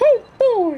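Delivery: squeaked out, high-pitched and loud. Trying an impression someone requested: Mickey Mouse impression. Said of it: "I was going to try to do a Mickey Mouse impression".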